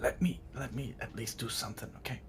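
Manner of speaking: quiet whispering voice. Speaking in character to another player's character: quiet whisper. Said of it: "I quietly whisper".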